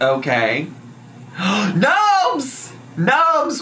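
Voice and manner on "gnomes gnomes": high, gasping, thrilled outburst. A streamer calls out to viewers, with a gasp.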